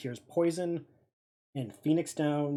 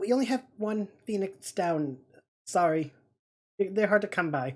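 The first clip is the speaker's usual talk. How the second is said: anxious, uneasy, nervous voice, high tone; 5 semitones higher than usual. Speaker voicing the people who tell you this, in a nervous tone. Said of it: "in a very um, nervous tone".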